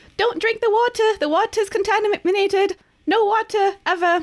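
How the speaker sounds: screaming at full volume, high full-lungs yell. As Quill, flying down to perch on the water, yelling at the top of her lungs. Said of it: "just yell at the top of her little bird lungs".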